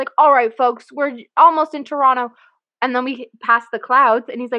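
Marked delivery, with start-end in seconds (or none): 0.2-2.3 loud, raised loudspeaker announcer voice. Retelling a little boy on a landing plane, doing a mock loudspeaker announcement. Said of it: "pretending to be a loudspeaker or like talk on like a microphone".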